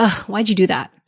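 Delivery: judgmental, shaming, accusing tone. Demonstrating the fake why question that is really judgment, judgmental. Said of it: "The fake why sounds kind of like".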